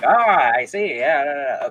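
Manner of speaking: slow, bad, old-timey thirties serial voice. Describing how a classic gentleman talks, a terrible 1930s TV serial impression. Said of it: "that's a terrible impression".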